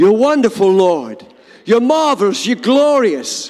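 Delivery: loud, full-voiced, spirited, energetic delivery. Showing how to praise God, the speaker says it loud. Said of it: "And that is loudly. ... You praise God like this".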